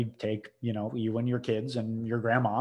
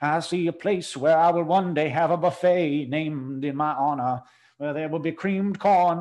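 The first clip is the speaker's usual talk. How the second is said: put-on hammy, old-timey Southern accent, pitched higher; 5 semitones higher, 4 dB louder than usual. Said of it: "in character a lot".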